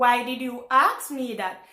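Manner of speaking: normal talking voice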